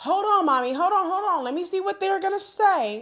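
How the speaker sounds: put-on very high voice of an eight-year-old. Retelling her daughter begging to hear the radio: imitating her eight-year-old daughter. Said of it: "she'd be like".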